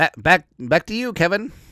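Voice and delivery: high nasal put-on voice. Imitating the commentator calling the game: high nasally Tom Brady voice. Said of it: "in his high nasally voice".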